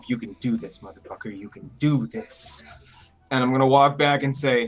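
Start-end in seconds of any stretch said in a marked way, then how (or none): 0.1-2.6 quiet under-the-breath whisper to oneself. Playing a character psyching himself up before a race: whispering to himself. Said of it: "I'm gonna whisper to myself".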